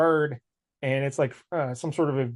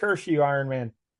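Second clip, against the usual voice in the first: normal talking voice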